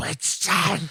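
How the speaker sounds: put-on furious shout. Retelling a movie scene: imitating John Wick's scathingly angry shout. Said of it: "he says it in the most scathingly angry".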